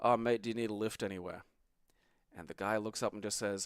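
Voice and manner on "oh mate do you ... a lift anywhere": plain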